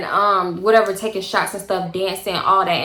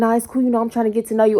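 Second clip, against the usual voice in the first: put-on whispering voice; 2 semitones higher than usual. Retelling what a man at a party whispered in her ear: imitating someone whispering. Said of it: "So he whispering in my ear like".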